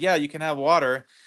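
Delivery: ordinary delivery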